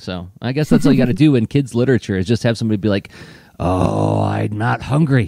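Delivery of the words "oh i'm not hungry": very drawn-out, slow, creaky scary voice. Explaining a trick in kids' literature, saying a character's line in a scary voice. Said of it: "in a scary voice".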